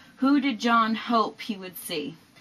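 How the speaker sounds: ordinary talk, nothing marked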